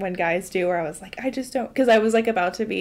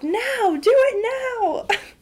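mock very high, very slow, drawn-out shout; 4 dB louder than usual. Retelling a video of yelling at someone to do it again: imitating her own yelling. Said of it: "I'm yelling at Brody to twerk".

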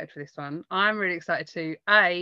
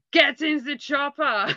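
slow, drawn-out, pitched-up yell; 8 semitones higher than usual. Retelling how a partner yelled a line: yelling in Arnold Schwarzenegger voice. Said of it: "in an Arnold Schwarzenegger voice".

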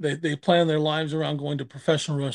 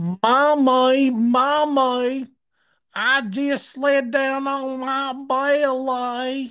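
very high, loud, exaggerated, stretched drawl; 10 semitones higher, 6 dB louder than usual. Retelling what a little girl in the South told her mother: exaggerated Gomer Pyle drawl. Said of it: "Like fucking Gomer Pyle on steroids".

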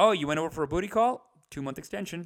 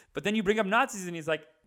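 usual speaking voice

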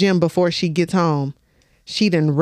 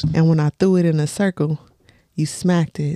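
put-on female digital assistant voice; 2 semitones lower than usual. Acting out a flirty text a woman sends, doing the voice. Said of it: "hit the voice".

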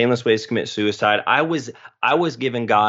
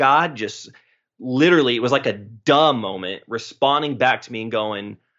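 ordinary delivery

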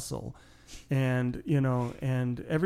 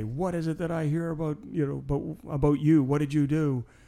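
grave, disapproving, very stern and severe tone; 3 semitones higher than usual. Speaker retells what a man said on coming into the room: mock-stern. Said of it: "in a very stern way".

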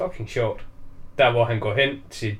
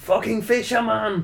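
high-pitched, shouted, flung-out delivery; 8 semitones higher than usual. Retelling a film scene where a character yells at someone: imitating someone shouting. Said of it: "så råber han også bare".

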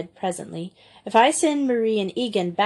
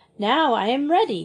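cheerful, ready, storybook tone; 4 semitones higher than usual. The robin, seated on their linked hands with her basket, cheerful. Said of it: "she said cheerfully".

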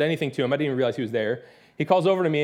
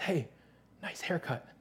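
soft whisper, very close to the ear; 12 dB quieter than usual. Retelling a stranger leaning close during worship: imitating a whisper. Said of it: "someone whisper, like, an inch from my ear".

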